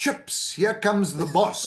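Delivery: put-on light, mild shout. Retelling a midnight warning call as the boss approached: retelling a shout. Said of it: "and I shouted".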